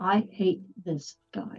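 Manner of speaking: very quiet, hushed voice. Voicing a character over a mental link: very quiet voice. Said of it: "very quietly".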